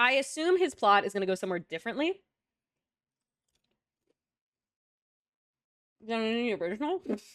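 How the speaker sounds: talking with mouth full while chewing. A speaker discusses a story's plot while talking with mouth full. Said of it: "I can't talk with popcorn in my mouth".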